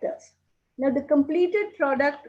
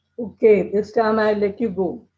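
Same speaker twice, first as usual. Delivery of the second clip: ordinary delivery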